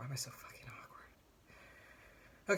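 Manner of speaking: very slow whispered mutter under breath. Talking to viewers about recording a video, muttered under breath. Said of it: "(under breath)".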